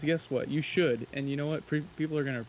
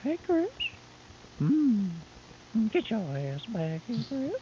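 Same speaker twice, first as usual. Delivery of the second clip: very high cartoon old-man voice, swooping around in pitch; 9 semitones higher than usual. Doing the voice after another speaker says he can: Herb voice. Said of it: "That was close".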